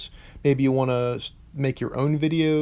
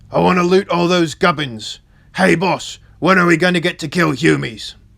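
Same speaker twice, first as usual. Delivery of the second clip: rough, very loud bellowing character voice; 3 semitones higher, 8 dB louder than usual. Performing a character's lines without changing accent, rough voice. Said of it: "I just sounded rough".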